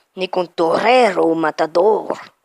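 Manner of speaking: very slow, fake Spanish accent. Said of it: "Je sais pas pourquoi je prends cet accent".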